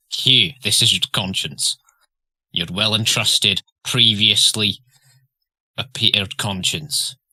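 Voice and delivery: loud, laid-on fake Scottish accent. Speaking to hugh as his conscience: put-on scottish accent. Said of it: "all consciences are Scottish".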